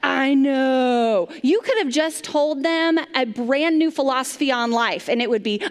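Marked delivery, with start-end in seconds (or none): 0.0-1.3 mock exasperated teenager voice with a sigh. Imitating a teenager brushing off a parent: imitating a frustrated teenager. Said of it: "That's how it goes".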